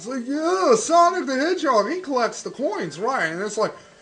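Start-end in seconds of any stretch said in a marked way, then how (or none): 0.3-3.3 put-on old man voice. Joking about mixing up coins and rings: imitating an old man. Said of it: "I sound like an old man now".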